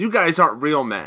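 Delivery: ordinary delivery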